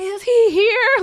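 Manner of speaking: shrieking, very high-pitched, very loud scream. Retelling bursting into an apartment looking for him: imitating herself screaming. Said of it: "screaming his name".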